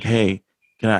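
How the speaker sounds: ordinary talk, nothing marked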